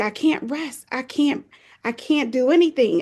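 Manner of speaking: acted, slow, drawn-out, desperate pleading. Retelling crying out to the Lord while overwhelmed: retelling a desperate cry to God. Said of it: "I started to cry out to the Lord".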